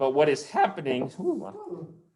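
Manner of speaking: sudden high-pitched voice. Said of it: "my voice went up by about three levels".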